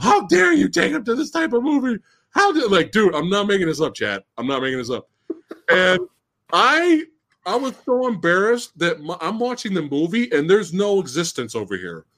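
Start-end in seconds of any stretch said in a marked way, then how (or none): 0.0-2.7 put-on yelling, higher. Retelling how mom yelled at dad in a movie theater: imitating mom yelling. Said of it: "yelling at him".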